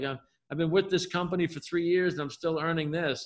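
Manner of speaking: ordinary talk, nothing marked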